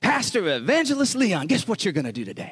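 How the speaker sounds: revved-up, eager, teasing, excited, high swooping voice. Retelling how a missionary spoke to him: imitating an excited talker. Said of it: "he got you all excited when he talked".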